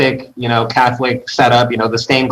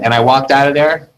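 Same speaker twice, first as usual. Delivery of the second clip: plain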